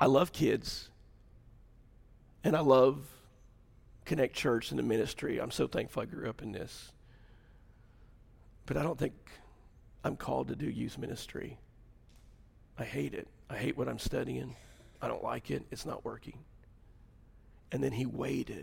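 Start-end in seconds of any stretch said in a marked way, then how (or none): 0.0-16.4 quiet, flat, laid-back monotone with no emotion. Retelling a son's announcement to his parents: imitating a quiet, emotionless voice. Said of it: "in his quiet, laid back, no emotion self".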